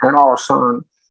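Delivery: put-on high Southern American accent. Quoting a man who learned English in the US, imitating a gringo accent. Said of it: "hablaba así con acento gringo".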